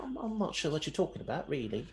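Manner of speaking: put-on very polite English accent, soft and high. Playing a character in a game: polite high-pitched English accent. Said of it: "a very polite, high pitched English accent".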